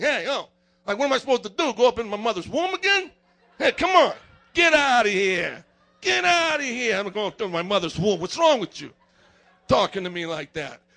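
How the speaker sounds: swooping, sarcastic tone with Italian flair. Acting out Nicodemus replying to Jesus: sarcastic Nicodemus with Italian flair. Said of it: "Nicodemus might have had a little Italian in him, like he was being sarcastic".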